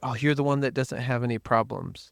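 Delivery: normal talking voice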